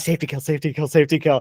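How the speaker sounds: hushed stage whisper, repeated over and over. Retelling a training exercise, imitating half-whispering to the other guys. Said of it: "We're like whispering to these guys".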